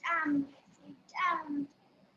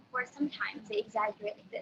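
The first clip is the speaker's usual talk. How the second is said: normal talking voice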